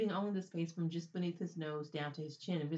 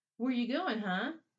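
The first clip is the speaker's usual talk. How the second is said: loud, pitched-up, mockingly cheerful, falsely friendly voice; 6 semitones higher, 5 dB louder than usual. The bald one, circling Danny with the others, asks him, mockingly cheerful. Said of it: "the bald one asked in a mockingly cheerful tone".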